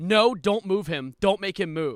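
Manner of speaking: very loud, shrill hollering. Telling a story, the speaker acts out someone yelling not to move a friend, retelling a yell. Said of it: "And then Gary yelled".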